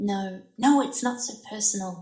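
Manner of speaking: hissed whisper under breath. Reading a memoir aloud, a classmate responding to the narrator's face: hissing under breath. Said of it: "hissed under her breath".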